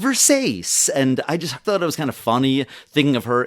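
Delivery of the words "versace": ditzy fashionista voice at a very high pitch. Speaker imitates how the character would say a fashion brand: ditzy Legally Blonde character voice. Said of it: "ditzy, uh, Legally Blonde character ... the way she would say, kind of smiling".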